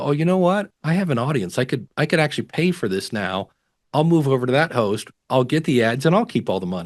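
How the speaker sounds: ordinary talk, nothing marked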